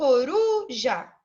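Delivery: ru of coruja stressed, said loudest. Teaching Portuguese word stress: stress on ru in coruja. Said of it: "Esse ru do coruja, eu falo ele naturalmente mais alto".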